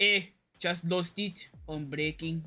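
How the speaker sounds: deliberately bad put-on French accent. Reading out Gasly's team radio message, in a French accent as Gasly. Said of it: "Has a horrible French accent".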